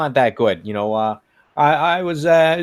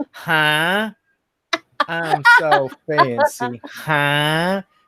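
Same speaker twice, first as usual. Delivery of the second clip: very slow mocking put-on voice, huh stretched out; 2 semitones higher than usual. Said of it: "Like she's [name]".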